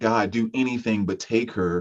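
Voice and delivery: ordinary talk, nothing marked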